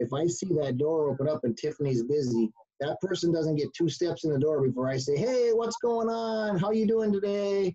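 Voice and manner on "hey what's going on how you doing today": loud, high, energetic, big called-out voice. Describing how he greets customers at the door, retelling a raised-voice greeting. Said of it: "And I elevate my voice".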